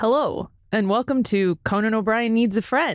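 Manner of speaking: official-sounding host voice. Opening the podcast in place of the absent host, channeling Conan O'Brien, official-sounding. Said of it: "That was very official sounding".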